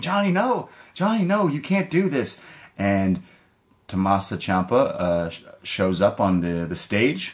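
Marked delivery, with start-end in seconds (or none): 0.0-2.4 acted, very high, desperate, frantic cry. Retelling how Candice LeRae begs him to stop: imitating a frantic plea. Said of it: "Candice LeRae loses it".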